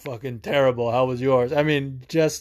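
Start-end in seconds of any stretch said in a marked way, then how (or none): 0.0-1.5 put-on disgruntled New Jersey bartender voice. Retelling a bar visit, quoting the bartender: imitating a disgruntled Jersey bartender. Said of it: "disgruntled Jersey bartenders".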